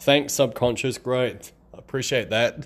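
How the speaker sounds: high, sarcastic tone. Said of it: "I'm being sarcastic".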